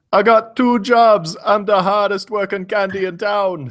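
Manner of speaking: put-on thick, heavy Jamaican accent, pitched very high. Quoting a remembered guy's line in a heavy Jamaican accent. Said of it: "this guy with this heavy Jamaican accent".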